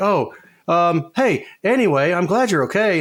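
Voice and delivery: high, badly acted, hammed-up wigging out. Mocking the bad voice acting of Maria in Silent Hill two: imitating Maria's bad voice acting. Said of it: "I think the voice acting in that one is really bad, especially Maria".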